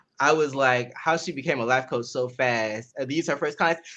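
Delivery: ordinary delivery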